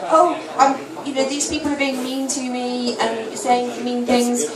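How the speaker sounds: plain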